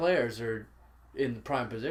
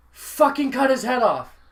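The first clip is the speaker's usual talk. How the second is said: very loud, very high-pitched scream; 12 semitones higher, 12 dB louder than usual. Recalling watching football with Ed, act out his outburst at the TV, imitating Ed shouting very loudly. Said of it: "if not shouted very loudly at the TV".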